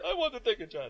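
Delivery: put-on poor Pakistani or Indian accent. Retelling a man's repeated line in a story, terrible Pakistani or Indian accent. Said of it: "My terrible like Pakistani or Indian accent".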